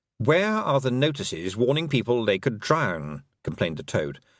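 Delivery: ordinary delivery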